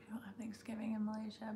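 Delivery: very soft unvoiced whisper.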